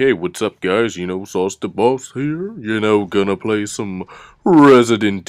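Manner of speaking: deep just-woke-up morning voice. Showing how he sounds just after waking up, in a deeper morning voice. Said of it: "I have pretty deeper voice".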